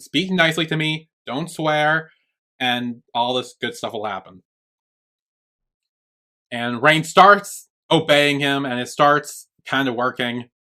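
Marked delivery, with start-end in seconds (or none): none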